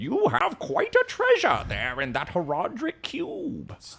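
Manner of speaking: soft, lilting game quest-giver storytelling voice, swooping pitch. Friends discussing Diablo 2 voice acting, quoting the game's character: Deckard Cain impression. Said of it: "Was that really the voice acting".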